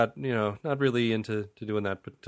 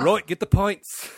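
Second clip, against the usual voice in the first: high, loud, put-on English accent; 8 semitones higher, 5 dB louder than usual. Joking with others about averting the apocalypse, speaking in an english accent. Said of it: "that's my English accent".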